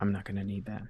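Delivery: whispering. One character whispers in another character's ear. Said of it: "he just whispers in your ear".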